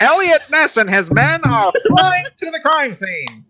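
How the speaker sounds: very high, very loud 1930s radio announcer voice. Two men discussing a film; one tries his line as a 1930s radio announcer voice. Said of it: "Mine sounds like a 1930s radio announcer thing".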